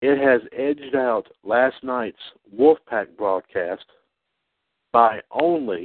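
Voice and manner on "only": the word "only" strongly stressed. Explaining which broadcast ran longest, stress on only. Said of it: "and I emphasize the word only".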